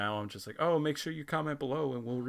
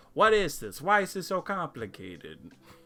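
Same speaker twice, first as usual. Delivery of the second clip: high, yelling, put-on Italian accent; 5 semitones higher, 6 dB louder than usual. Act out how he will react to a little tech lesson, imitating yelling in an Italian voice. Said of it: "yelling at me in his Italian voice".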